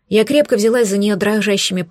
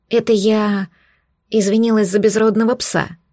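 ordinary delivery

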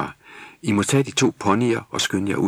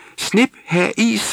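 shrill, very high-pitched screech; 13 semitones higher, 4 dB louder than usual. Chiming in while a seller lists his wares, shrieking. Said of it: "skreg Snip".

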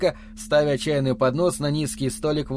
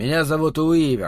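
ordinary delivery

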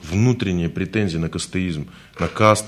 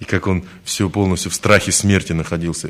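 plain

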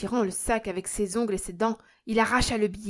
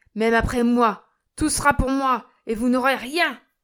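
loud, menacing, threatening shout; 3 semitones higher, 7 dB louder than usual. A narrator reads a man crying out at his children, crying out threateningly. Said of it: "s'écria-t-il en menaçant ses enfants du geste".

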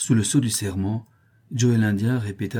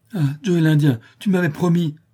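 sudden, loud, high exclamation, crying out; 8 semitones higher, 6 dB louder than usual. A drunk man in a crowd spots someone and cries out. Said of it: "Il aperçut Joe et s'écria".

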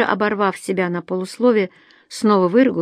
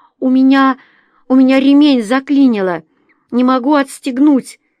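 panicky, pitched-up, raised voice, panic creeping in; 5 semitones higher, 8 dB louder than usual. Narrator reads a girl stuck in a burning car, with notes of panic. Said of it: "В ее голосе проскользнули нотки паники".

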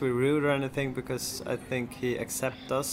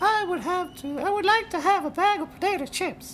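put-on exaggerated American accent, much higher pitch; 5 dB louder than usual. Comparing American and English words, mimicking how Grant asks for potato chips: imitating Grant's voice. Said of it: "that's how I say it in that voice".

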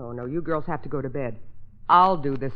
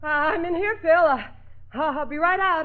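puffing and panting, out of breath, higher; 14 semitones higher, 4 dB louder than usual. A woman answers a man calling for her from another room: out of breath, puffing. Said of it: "Listen to her puff".

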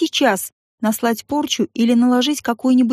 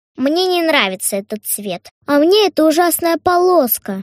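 sulking, grumbling, sulky, pouty tone; 4 semitones higher than usual. Narrator reading a character's line in a story, sulky. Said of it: "насупилась Кристин".

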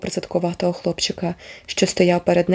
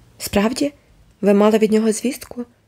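usual speaking voice

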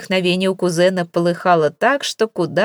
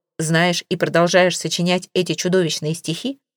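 plain

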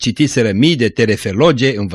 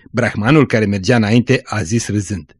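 plain

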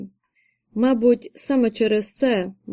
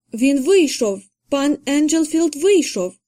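panting, breathless, out-of-breath exclamation; 4 semitones higher than usual. A young maid bursts into the nursery with news: breathless exclamation. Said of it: "засапана молодша служниця і вигукнула".

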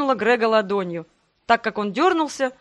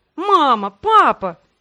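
sudden, high, loud crying out; 5 semitones higher, 7 dB louder than usual. Greg sees his mother and father standing there; exclaiming. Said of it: "воскликнул Грег".

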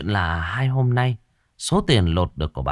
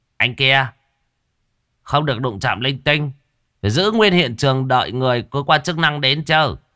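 voice raised and pitched up; 6 semitones higher, 4 dB louder than usual. A man addresses another man sitting beside two bodies: raised voice. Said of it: "Ông mới cao giọng".

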